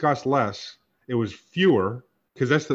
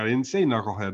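usual speaking voice

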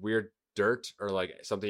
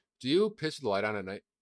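ordinary talk, nothing marked

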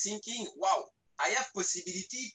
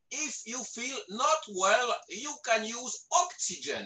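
put-on heavy Russian accent; 4 semitones higher than usual. Retelling what a man told him before his flight, in a big russian accent. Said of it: "with a big Russian accent".

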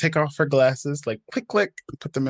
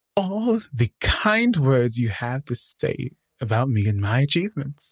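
put-on speech through gritted, clenched teeth; 3 semitones lower than usual. Retelling what a woman said while forcing politeness, acting out gritted-teeth speech. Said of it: "she's saying this with gritted teeth".

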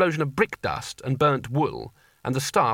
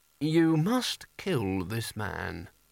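mechanical, metallic, exact, precise delivery; 3 semitones lower, 5 dB quieter than usual. Reading a story, the sorcerer's staff answers the question, metallic and precise voice. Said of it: "the voice of the staff was metallic and precise".

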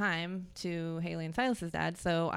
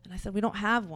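usual speaking voice

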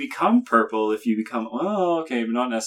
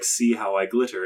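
ordinary delivery

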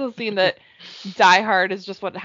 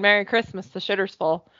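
plain

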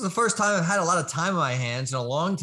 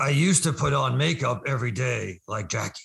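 disguised, put-on monster voice, much lower pitch; 5 semitones lower than usual. A masked guest gives a last clue before the big reveal: disguised monster-like voice. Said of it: "You sound like Cookie Monster meets".

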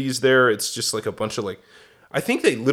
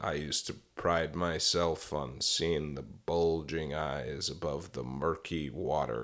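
very low, slow, flat, detached monotone drone; 7 semitones lower, 12 dB quieter than usual. Imitating how a recorded speaker described catching frogs: Ted Bundy's detached monotone. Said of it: "He's like".

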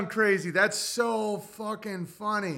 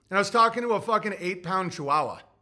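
ordinary talk, nothing marked

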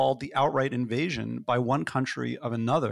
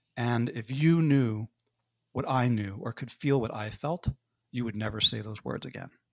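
put-on stern voice. Retelling a father's reply at the Thanksgiving dinner table: imitating a stern voice. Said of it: "in probably the sternest voice he'd ever used".

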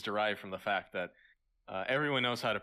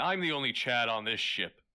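put-on sudden loud shout, full voice; 3 dB louder than usual. Retelling how a cast member shouted before a scene: imitating someone shouting. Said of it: "started shouting".

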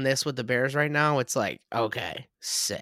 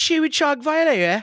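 put-on British broadcaster accent, mispronounced word, higher and louder; 12 semitones higher, 5 dB louder than usual. Retelling how a British broadcaster said a player's name: imitating a British broadcaster's accent. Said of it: "I saw a British broadcast say Tua Tagovailoa".

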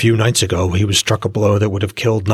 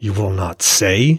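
speaking through a tightly clenched jaw. Narrating his reply to those who refuse to speak, through a clenched jaw. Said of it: "He spoke through a clenched jaw".

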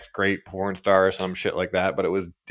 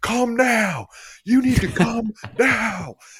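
play-acted very high, stretched-out, drawn-out yelling; 4 dB louder than usual. Retelling how the judges shouted at the contestants: imitating someone yelling. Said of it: "are just yelling at them".

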